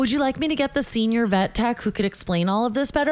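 ordinary talk

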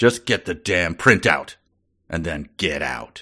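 curt, snapped delivery. Reading a book character's line as a cue for another speaker: snapping. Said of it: "he snapped".

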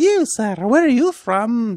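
put-on Scottish woman's accent. Retelling a woman at the Edinburgh Dungeons asking a man: Scottish woman accent attempt. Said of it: "I was trying to do a woman with the accent".

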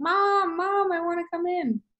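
whiny, very high-pitched and very slow, drawn out. Retelling him at the door while his birthday things were hidden, imitating a child whining. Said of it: "whining at the door".

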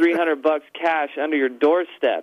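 normal talking voice

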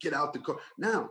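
put-on urgent, yelling cop voice. Retelling a gun pointed at him in his car, the speaker imitates the cop's yell. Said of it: "the cop starts yelling".

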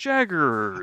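game announcer style voice. Recalling a baseball video game, imitating the announcer's voice. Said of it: "this announcer's voice is like".

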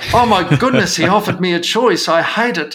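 high, huffy, outraged, indignant outburst. Acting out a patient storming out over being offered a choice: imitating an outraged patient. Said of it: "storm out of the room and say".

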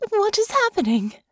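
trembling, shaking, very high voice. Just woken from a nightmare, she asks a question, voice shaking. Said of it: "her voice shaking along with her body".

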